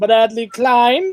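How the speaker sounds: put-on British accent. Reading a list of names aloud, voicing this one in a British accent. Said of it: "that's a different British accent".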